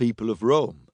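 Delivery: ordinary delivery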